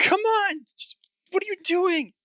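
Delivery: tiny, very high-pitched, slow, shrunken voice. Voicing a character who has just shrunk in size: higher-pitched shrunken character voice. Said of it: "Her voice is a lot higher pitched now".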